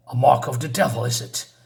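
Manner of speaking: put-on British English accent. Voicing a character's lines from a story description, in a british english accent. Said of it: "I'm saying this in some kind of a British English voice".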